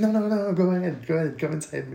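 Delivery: sweet, nurturing, encouraging motherly voice. Retelling a movie scene: imitating a motherly tone. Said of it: "'Cause she's being so motherly".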